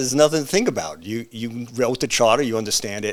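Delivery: normal talking voice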